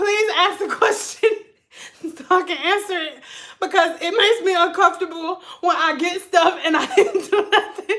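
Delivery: words breaking up with helpless, uncontrollable laughter. Asking the others to ask a question, laughing uncontrollably while talking. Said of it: "I laugh uncontrollably".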